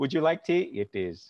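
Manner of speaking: put-on Indian-accented English. A half-indian speaker does a quick bit for the others, in an indian accent. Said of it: "I like that you do it in the accent".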